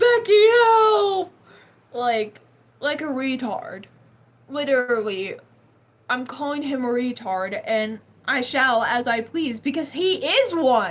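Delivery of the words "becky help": very high, loud mock sobbing. Retelling how Travis, kicked out, begged the speaker's mom, imitating Travis crying and begging. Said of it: "He's crying. He's begging my mom".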